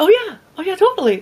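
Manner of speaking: very high polite voice. Showing why listeners can't tell their gender, the speaker demos: higher polite voice. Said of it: "then I drop my voice again".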